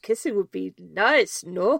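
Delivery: bad, weak put-on French accent. Retelling a talking frog's reply to a joke: attempted French accent. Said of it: "I cannot do that accent".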